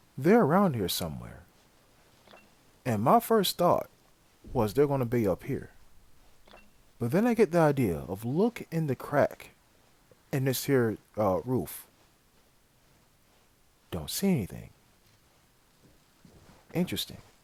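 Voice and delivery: quiet, hushed voice. Commentating over gameplay video, listening for a crawling enemy: speaking quietly. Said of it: "I'm being quiet so that way y'all can listen".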